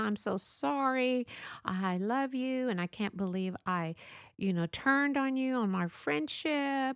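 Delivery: sobbing, boo-hoo, tearful crying voice. Retelling a friend's phone call, imitating someone crying while apologizing. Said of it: "and she's crying".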